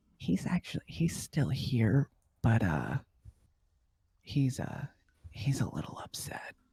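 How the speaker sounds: soft, hushed whisper. A game narrator voices a character who leans forward, whispering. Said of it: "he kind of leans forward and he whispers".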